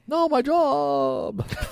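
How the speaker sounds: mock old-man voice, very high, slow, croaking.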